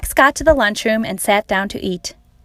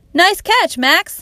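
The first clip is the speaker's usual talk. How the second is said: high, shouted, called-out yell; 9 semitones higher than usual. Narrator reads Tom yelling to Max after his one-handed catch; yelled. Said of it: "yelled Tom".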